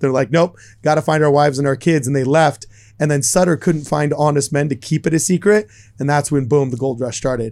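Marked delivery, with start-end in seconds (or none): none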